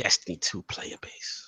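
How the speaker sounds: dramatic, hushed, soft whisper.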